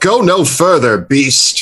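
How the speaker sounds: firm, stern, heroic tone. A player's hero stops a creature at sword point, yelling. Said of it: "And I yell".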